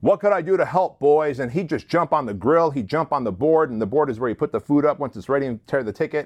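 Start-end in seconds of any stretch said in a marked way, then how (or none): 0.0-1.4 booming, half-bellowed voice. Recalling how Doug offered help on busy shifts: Doug's big bellowing voice. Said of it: "with his big bellowing voice".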